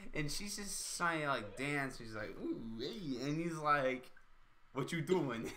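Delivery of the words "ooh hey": put-on seductive voice, quieter. Retelling a movie scene where Rainn Wilson tries to sleep: Ellen Page, mock-seductive. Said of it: "Ellen Page was like really horny".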